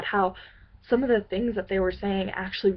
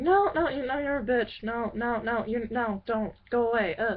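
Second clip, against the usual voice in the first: mock mean taunting tone, higher; 3 semitones higher, 3 dB quieter than usual. Retelling how a group of people bullied them: imitating mean bullies. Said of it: "just mean in general".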